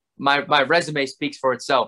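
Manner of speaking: plain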